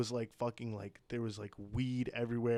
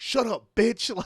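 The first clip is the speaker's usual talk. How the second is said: very high, very loud, shrill screaming; 11 semitones higher, 12 dB louder than usual. Recounting a couple's fight, speaker imitates the man yelling at his wife. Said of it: "literally yells at her".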